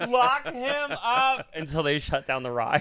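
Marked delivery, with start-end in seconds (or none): 0.1-1.5 acted screaming, higher and louder. Retelling screaming at a talking animatronic in a dark room: retelling own scream. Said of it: "I stood up and just screamed".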